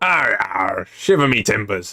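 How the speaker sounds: put-on pirate voice. Practicing pirate talk while playing so it is not forgotten: put-on pirate voice. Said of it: "I gotta practice me pirate".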